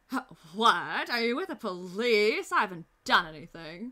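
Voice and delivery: slow, steady, deliberate character voice. Voicing a game character questioned about the police: Richter's voice. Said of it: "that's Richter's voice".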